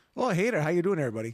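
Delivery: loud, put-on Canadian accent. Given country names, the speaker does the accent for canada: canadian accent. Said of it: "I want you to do the accent for those names".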